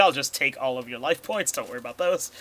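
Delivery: plain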